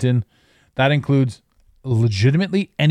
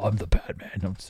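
authoritative cop tone, lower, much quieter; 4 semitones lower, 9 dB quieter than usual. Joking about Batman's intimidating way of talking, in Batman's authoritative cop tone. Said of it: "takes the whole cop tone".

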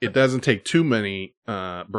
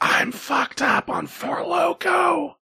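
very high, slow, drawn-out loud stage whisper. Retelling what a hammered mother said so people would hear: imitating a loud whisper. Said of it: "whispers, I guess loudly".

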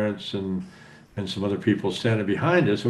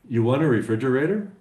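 ordinary talk, nothing marked

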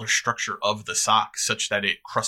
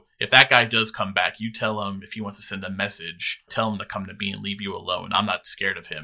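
ordinary talk

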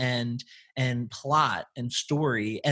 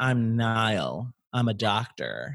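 low, arrogant, chauvinistic voice full of itself; 4 semitones lower than usual. Describing a man she hated, mocking Niall's arrogant voice. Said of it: "chauvinistic, like, you know, arrogant voice".

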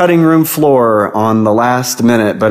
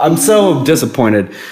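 ordinary talk

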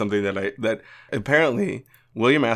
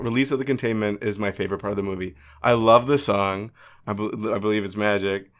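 normal talking voice

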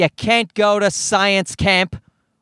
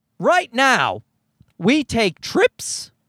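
voice breaking and pitching up partway through; 5 semitones higher than usual. Speaker talking about having to pay the mortgage, voice cracking. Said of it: "as my voice cracked".

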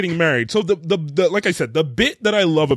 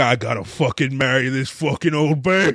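put-on angry ranting man voice, lower; 3 semitones lower than usual. Retelling what a reluctant groom says, imitating an angry man. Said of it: "He's so mad".

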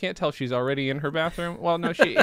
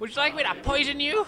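put-on classic elderly old lady character voice; 12 semitones higher than usual. Playing a woman whose home is intruded upon: classic old lady voice. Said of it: "Classic old lady voice".

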